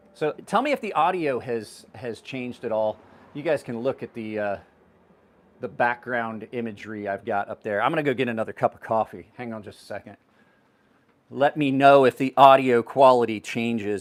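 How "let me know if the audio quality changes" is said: raised voice, calling out. Speaker walks away from the camera to get coffee, raised voice. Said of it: "I don't know why I'm raising my voice".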